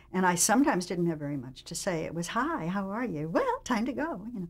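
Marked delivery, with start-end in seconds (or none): 2.2-4.2 play-acted peppy, bubbly, perky sing-song delivery. Recalling short lines said on the show: imitating own perky, bubbly delivery. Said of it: "I just had to say it with perk and bubble".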